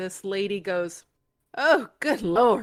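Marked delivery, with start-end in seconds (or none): 1.6-2.6 loud exclamatory outburst. Retelling what a lady in the theater said near the end: retelling a loud exclamation. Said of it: "And she said it loud".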